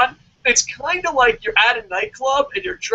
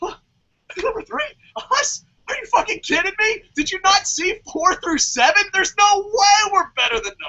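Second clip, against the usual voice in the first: stunned, worked-up, pitched-up emotional disbelief; 9 semitones higher than usual. Recounting hearing their ranking, the speaker retells getting a little emotional. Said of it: "I like got a little emotional".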